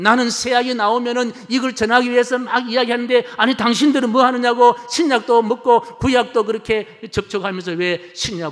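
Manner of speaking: high, loud, furious angry shout. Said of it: "버럭 화를 내더랍니다".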